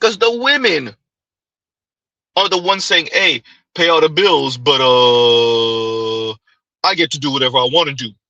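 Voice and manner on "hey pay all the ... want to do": slow, mock deep voice with drawn-out uh. Speaker quoting what the women are saying, deep voice. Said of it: "you didn't have to do the deep voice".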